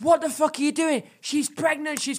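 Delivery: put-on man screaming. Retelling how a bloke screamed at them while stuck between chairs, retelling being screamed at. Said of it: "I'm getting screamed at by this bloke".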